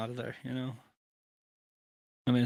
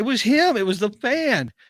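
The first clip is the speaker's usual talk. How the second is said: high, loud crowd-like voice. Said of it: "everybody around is like".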